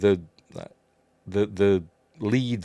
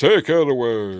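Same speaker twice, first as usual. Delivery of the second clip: slow, with away drawn out, film-star style; 2 semitones higher, 4 dB louder than usual. Recounting a scene where she smashes her head, deliver the next line in a James Mason voice. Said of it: "in his James Mason voice".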